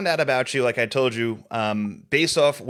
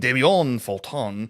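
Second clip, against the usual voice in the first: put-on French accent. Saying a guest's name the way he made them: put-on french accent. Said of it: "as he made me say in a French accent".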